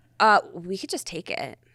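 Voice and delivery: ordinary talk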